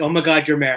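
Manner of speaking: ordinary delivery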